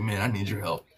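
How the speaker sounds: under-the-breath muttering. Retelling what a man said during a workout interview: imitating a line said under his breath. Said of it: "he just said it under his breath".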